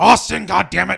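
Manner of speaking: gruff, put-on wrestling-boss impression voice. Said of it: "my best Vince McMahon voice".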